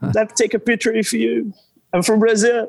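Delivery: play-acted gushing eager fan yell, high and fast. Retelling calling out to a hurrying man for a picture: imitating own yell. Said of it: "I yelled".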